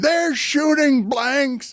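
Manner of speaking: mock angry, fed-up announcer scream. Speaker recalls an announcer's call at the end of a game; retelling an angry scream. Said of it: "He was just screaming".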